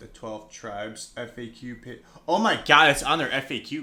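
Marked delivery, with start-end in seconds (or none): 2.3-3.8 full-on, very loud shouting yell. Speaker reads the twelve tribes' FAQ page aloud and reacts, yelling. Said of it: "Sorry for yelling".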